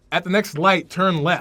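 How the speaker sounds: loud American navigation voice. Comparing navigation voice accents, doing the American one: imitating American Siri voice. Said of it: "Americans like".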